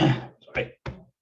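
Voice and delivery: cranky, nearly voiceless raspy voice. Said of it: "cranky voice".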